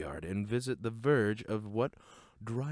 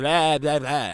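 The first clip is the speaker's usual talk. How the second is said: put-on vampire voice, louder, higher; 4 semitones higher, 11 dB louder than usual. Wishing everyone a happy Halloween, doing a terrible Dracula impression. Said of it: "terrible Dracula impressions aside".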